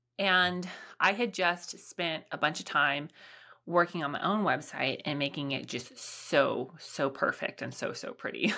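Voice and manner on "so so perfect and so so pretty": sarcasm laid on thick, heavy and dripping. Describing the work spent on their own website: heavy sarcasm. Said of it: "I say with lots of sarcasm".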